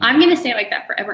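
loud, fast, defiant accented voice. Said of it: "I'm gonna increase my accent".

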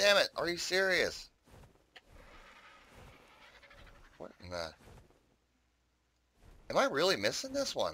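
annoyed, disbelieving outburst. Gamer realizing he lost sight of one he wanted: irritated. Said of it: "Now I'm just getting kind of irritated".

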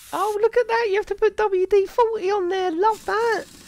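excited, high-pitched talking. Inspecting car brake parts and spotting wd-40, high-pitched excited voice. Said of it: "Why am I talking so high?".

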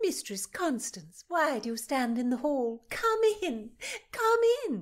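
lively, jaunty, upbeat calling out. Calling out jauntily to a woman standing in the hall. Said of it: "Thomason called out jauntily".

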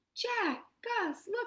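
very high, delighted, squealing cry of joy. Babette, finding Cinderella's bracelet, calls to Jack and Gus, joyful cry. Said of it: "she cried".

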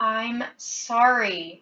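strained, pained voice between heavy breaths. Kicked and wounded by George, Minot apologizes in a strained, pained voice. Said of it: "his voice strained and full of pain".

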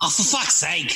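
put-on Australian accent. Retelling how Brisbane workmates reacted, when asked: imitating workmates' Australian accent. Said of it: "to try an accent".

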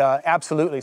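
usual speaking voice

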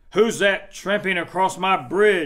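loud, bellowing, roaring troll voice. A troll challenges the goat crossing his bridge, roared. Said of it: "Roared the troll".

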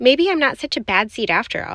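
usual speaking voice

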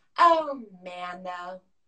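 low voice, catchphrase-style delivery. Quoting a castmate's favorite phrase the way he says it: imitating Harry Boobie's catchphrase. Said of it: "I love when he would just go".

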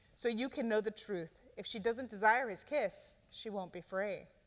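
ordinary delivery

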